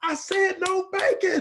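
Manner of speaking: very high, slow, drawn-out aggrieved, upset voice. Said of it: "I was upset".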